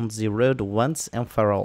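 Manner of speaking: put-on French accent impersonation. Getting the live show started, in a put-on French accent. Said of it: "That is my French impersonation".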